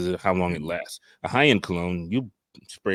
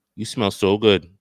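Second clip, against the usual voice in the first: put-on Dominican accent, louder; 2 semitones higher, 7 dB louder than usual. Retelling what an older woman in a store said: imitating heavy Dominican accent. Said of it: "she had a heavy accent".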